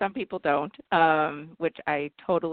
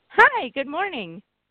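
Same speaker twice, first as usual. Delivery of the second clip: bright, very high-pitched, chipper voice; 10 semitones higher, 4 dB louder than usual. Joining the radio show on air, a doctor greets the host, chipper. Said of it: "You're all chipper".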